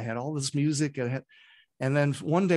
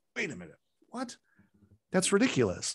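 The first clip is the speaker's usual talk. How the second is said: caught off guard, incredulous, high and startled; 5 semitones higher than usual. Retelling a startling idea while driving: retelling own startled reaction. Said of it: "it startled me".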